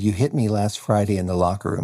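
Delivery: plain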